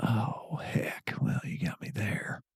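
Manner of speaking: soft, hushed whisper.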